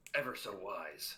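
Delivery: possibly mocking tone. Thanking the Master for his teachings, in character: sarcastic-sounding praise. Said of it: "can't tell whether he's mocking you or not".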